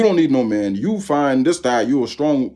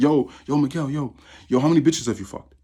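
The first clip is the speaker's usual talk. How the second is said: put-on young kid voice. Retelling what a young kid came up and said: imitating a young kid. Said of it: "the young kids over there".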